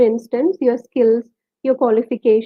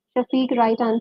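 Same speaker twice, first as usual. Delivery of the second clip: normal talking voice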